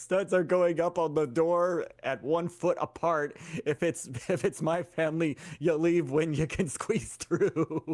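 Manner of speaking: speaking through laughter. Trying not to laugh too loud, laughing while talking. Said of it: "I'm laughing too hard".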